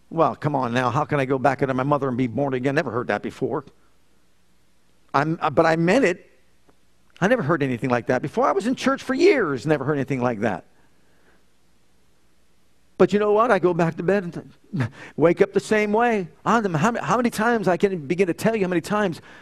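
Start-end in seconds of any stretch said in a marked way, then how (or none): 0.1-3.6 low, fast, sarcastic retort tossed off. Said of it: "I responded sarcastically".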